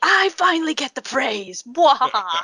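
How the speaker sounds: high, gloating villain voice with a cackle.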